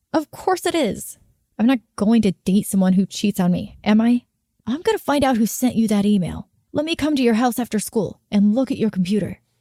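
plain

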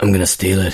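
low, dead-serious delivery. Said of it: "he says it so seriously".

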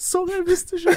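put-on sobbing. Retelling apologizing to an angry dad, imitating own crying. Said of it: "så bare begynner jeg å grine sånn".

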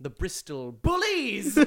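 "bullies" with pitch swung up high and wide. Announcing another made-up team name: shouting the last word bullies. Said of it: "I have to shout the last word like that".

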